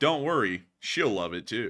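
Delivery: corny, cringey, cheesy commercial announcer delivery. Mocking a product commercial, the speaker quotes its line, imitating the cheesy delivery. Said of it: "And they say it like that".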